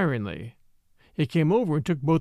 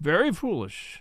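plain

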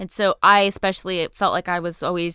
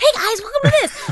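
very high, pitched-way-up voice; 6 dB louder than usual. Contrasting stand-up with YouTube, mocking a YouTuber intro: mock YouTuber intro voice. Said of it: "just being like".

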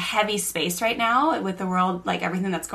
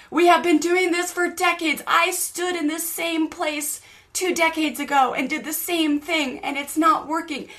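mock screaming, higher; 9 semitones higher than usual. Retelling a man screaming at a younger man: imitating someone screaming. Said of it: "And he's just screaming at him".

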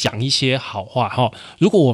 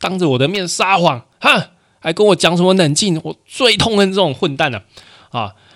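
mock furious, angry shout, pitched high; 8 semitones higher, 4 dB louder than usual. Explaining good cop, bad cop, the speaker plays the bad cop berating a suspect: acting out an angry bad cop. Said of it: "坏警官还是继续演".

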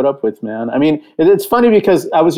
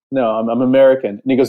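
ordinary talk, nothing marked

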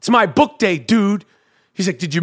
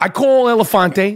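ordinary delivery

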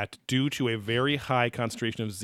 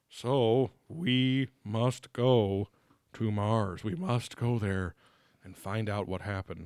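put-on old, wise-sounding chief voice.

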